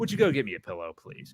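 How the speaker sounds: offhand, dismissive, bossy father voice. Retelling how the father orders a pillow: imitating a dismissive father. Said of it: "just the way that he even says it".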